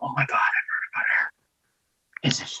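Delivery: very slow, quiet, hushed whisper. Speaking in character in class to friends about her: whispering to friends. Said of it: "whispering to my friends".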